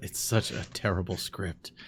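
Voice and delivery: barely audible, whispered mutter. Describing a scene where a man turns around; retelling a mutter under breath. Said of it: "under his breath".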